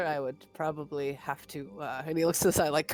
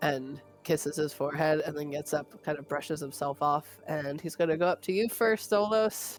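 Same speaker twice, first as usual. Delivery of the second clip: normal talking voice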